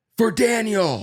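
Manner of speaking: very high woman's voice, called out loud. Retelling a shout from a speeding car's window, imitating a woman yelling. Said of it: "Like a woman's voice".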